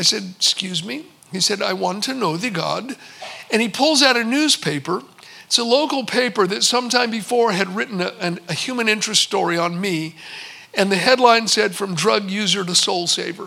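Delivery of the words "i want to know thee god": put-on thick, heavy Indian accent. Retelling what a man across the desk said to him; thick indian accent. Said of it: "in a very thick Indian accent".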